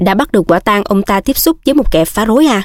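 ordinary delivery

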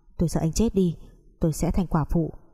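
ordinary delivery

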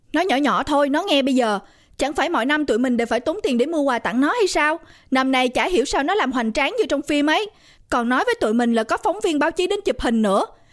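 ordinary talk

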